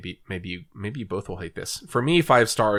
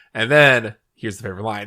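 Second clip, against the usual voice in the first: plain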